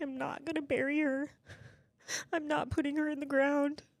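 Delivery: tearful sobbing, crying through tears. Retelling what Tyson said after the doctor left: imitating Tyson sobbing. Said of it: "through his tears and sobbing".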